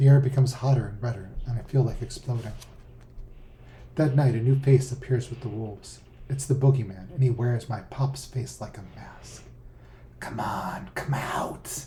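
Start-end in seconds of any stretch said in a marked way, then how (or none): 10.2-11.8 very slow, eerie, creepy whisper. Reading the boogeyman calling to the narrator in his father's voice, whispering. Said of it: "he whispers in my father's voice".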